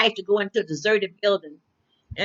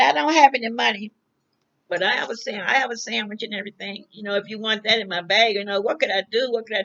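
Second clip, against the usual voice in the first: ordinary talk, nothing marked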